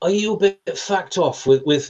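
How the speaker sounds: strong London Cockney. Retelling what a man asked after putting his guitar down, in a broad Cockney accent. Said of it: "in his broad, lovely broad Cockney accent".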